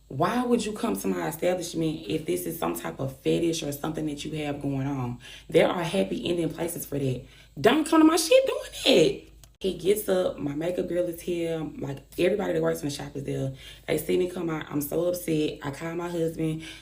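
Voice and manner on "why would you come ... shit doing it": ordinary delivery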